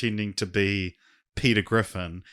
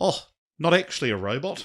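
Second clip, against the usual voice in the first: put-on heightened, high, pitched-up New Zealand accent; 6 semitones higher than usual. Showing someone the way Rhys Darby talks, do a Rhys Darby impression. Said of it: "the way Reese Darby's like".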